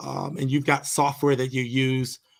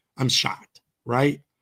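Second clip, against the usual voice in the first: normal talking voice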